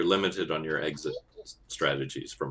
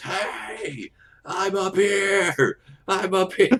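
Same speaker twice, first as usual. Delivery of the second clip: very loud, high, drawn-out top-of-the-lungs scream; 9 dB louder than usual. Voicing a character who notices the player's glint: screaming at the top of his lungs. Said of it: "immediately starts screaming at the top of his lungs".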